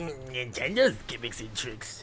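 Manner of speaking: extra-sleazy put-on voice, soft. Describing the voice they imagine for an emoji: sleazy Muscle Man voice. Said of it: "in that voice where it's like ... It's like Muscle Man, but make him a little bit more sleazy".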